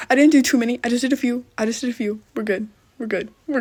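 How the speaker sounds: slightly panicky. Reassuring viewers while adding moderators, panicking a little. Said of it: "Your girl's just panicking a little bit".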